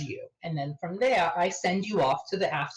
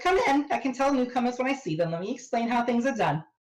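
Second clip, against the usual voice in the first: put-on New York accent, pitched up; 7 semitones higher than usual. The narrator voices a woman welcoming newcomers to the group, in a metropolitan accent. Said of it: "metropolitan accent".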